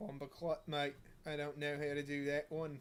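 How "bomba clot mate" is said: unintended put-on accent slipping into Australian. Before the next game, trying an accent that comes out as an accidental australian accent. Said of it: "Apparently everything turns Australian".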